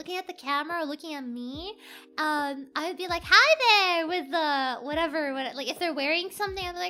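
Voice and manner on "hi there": cheerful, loud yelled call. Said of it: "like, yelling".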